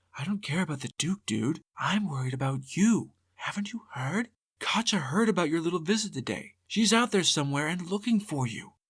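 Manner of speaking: hushed, leaned-in half-whisper. Reading a story aloud, a shepherd answers a devil: half-whispering back. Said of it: "leaned in to whisper back".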